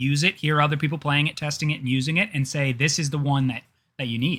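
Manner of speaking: usual speaking voice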